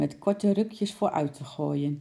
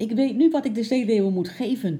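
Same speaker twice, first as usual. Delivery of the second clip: eager, excited, pitched-up call-out; 6 semitones higher, 6 dB louder than usual. Narrator reads the father's line, calling out excitedly. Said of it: "riep vader opgewonden".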